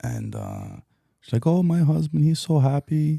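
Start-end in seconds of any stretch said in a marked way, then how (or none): 1.5-3.2 put-on Caribbean accent, high and drawn out. Retelling what a woman said: imitating a Caribbean accent. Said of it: "please don't with the accent".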